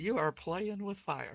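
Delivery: very quiet, soft, confidential tone. In a roleplay, a character leans over to another and speaks very quietly. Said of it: "I will say very quietly".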